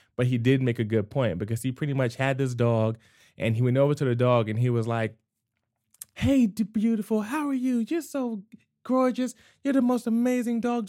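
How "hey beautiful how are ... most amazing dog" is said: very high, bright, sunny, cheerful happy voice. Retelling how a man spoke to his dog: mock-happy bright tone. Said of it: "on a brighter, happier pitch".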